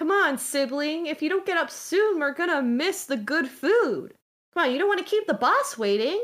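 high, fast nagging voice. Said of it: "nudges you and says".

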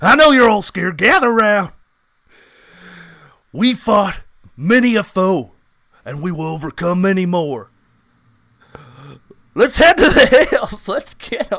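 full-blast rallying shout. Showing a better version of the gang leader impression: Dutch van der Linde voice. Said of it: "Yours is better".

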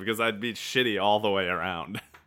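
normal talking voice

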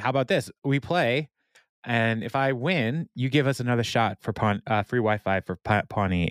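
ordinary delivery

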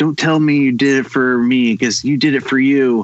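mock-angry outburst. Retelling a movie scene, voicing the gang's lead girl, retelling an angry line. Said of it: "And she was like all angry".

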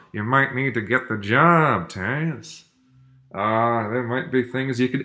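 smooth, suave put-on dad voice, old-movie-star style. Retelling what his dad tells Taz, imitating dad's voice. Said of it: "I can do the voice really well".

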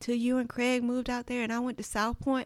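put-on very strong Southern Mississippi country accent. Retelling what dad said about church: imitating dad's Southern country accent. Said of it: "my dad has a country accent".

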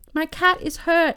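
high, anxious, fretful, urgent, worried voice. Reading a story, a passenger answers the angry train guy: worried. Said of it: "so worried for his cat".

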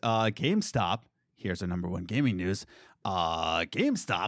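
put-on low voice.

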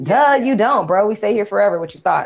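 mock, dripping, teasing, mocking sarcasm. Speaker retelling a woman's reply to a man's question: mock-sarcastic retelling. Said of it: "So now the sarcasm is on her end".

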